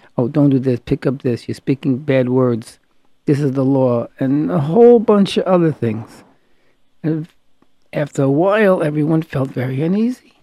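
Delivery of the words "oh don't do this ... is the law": ordinary delivery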